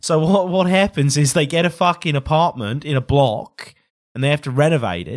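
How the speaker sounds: really bad, fake, put-on Australian accent. Describing the Australian reality show The Block, in a really bad Australian accent. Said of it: "I'm going to stop doing this really bad accent now".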